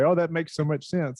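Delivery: ordinary talk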